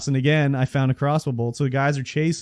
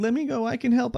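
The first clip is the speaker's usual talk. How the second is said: put-on whiny voice, pitched much higher; 10 semitones higher than usual. Recounting a game, the speaker quotes Hugo begging to help: mock-whining as Hugo. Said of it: "he just keeps whining".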